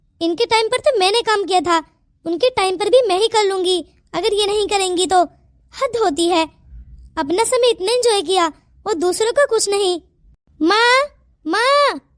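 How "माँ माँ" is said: insistent, urgent calling out. A daughter calls out to her mother, shouting. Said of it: "तू क्यों चिल्ला रही है?".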